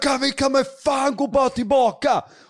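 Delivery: very high, drawn-out, panicked screaming. Recounting the moment they lost it in front of people, retelling a scream. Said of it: "börjar skrika".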